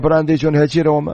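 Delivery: ordinary delivery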